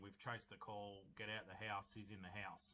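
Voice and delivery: normal talking voice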